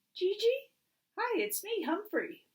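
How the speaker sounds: tiny high-pitched squeak. Narrator reads Humphrey calling to a possibly sleeping Gigi, in Humphrey's quiet squeak. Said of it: "so I quietly squeaked".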